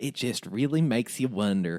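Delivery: twang laid over the words. Imitating how the other speaker just said a line: imitating a twangy voice. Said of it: "the way you said that, you were just like".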